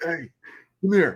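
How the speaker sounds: stock mafia-boss voice. Describing a man in videos who looks like a mafia boss, stereotypical mafia boss impression. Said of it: "like a stereotypical like mafia boss where he's like".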